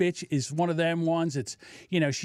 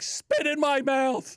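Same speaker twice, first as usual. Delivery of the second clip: mock yelling, higher pitch; 8 semitones higher than usual. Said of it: "she's like".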